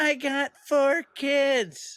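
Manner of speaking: mock very high, very slow, drawn-out yell. Retelling how a woman in the crowd called out: imitating a woman yelling. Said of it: "this woman in the crowd yells out".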